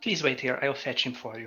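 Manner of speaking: character voice of a very short woman. A woman lets visitors inside and says she'll fetch him, in a very short woman's voice. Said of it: "a woman's voice. A very short woman".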